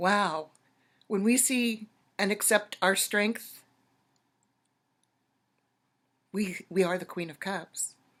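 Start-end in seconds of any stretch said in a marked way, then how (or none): 1.1-7.9 emotional, teary, choking-up delivery on the edge of tears. Addressing everybody right after the music moved the speaker, choking up, teary. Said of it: "I'm getting teary-eyed".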